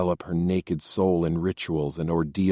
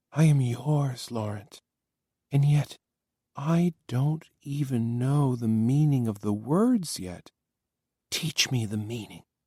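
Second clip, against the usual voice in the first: soft, hushed, heated whisper, much higher; 7 semitones higher than usual. Reading a story, a woman speaks to the narrator after kissing him, soft, heated whisper. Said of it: "in a soft, heated whisper".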